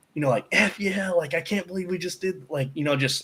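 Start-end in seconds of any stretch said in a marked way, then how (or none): 0.5-2.5 put-on, high, screaming shout. Retelling celebrating in the pit after a win: imitating own screaming. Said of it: "I started screaming".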